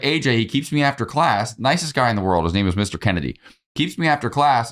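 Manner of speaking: normal talking voice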